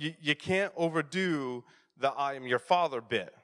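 normal talking voice

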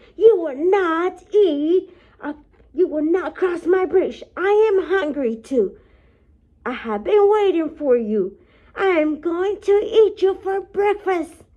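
loud, high screaming troll voice. Reading a fairy tale aloud, the troll answers the goat: screaming troll. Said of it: "The troll shook all over and he screamed".

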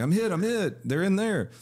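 very high, stretched wailing scream. Retelling what a man screamed while shooting into a cop car, retelling a scream. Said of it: "he started screaming".

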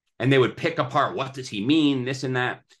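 ordinary delivery

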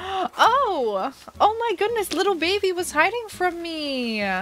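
gasping in surprise. Player finding a villager who was hiding in the game, gasping in surprise.

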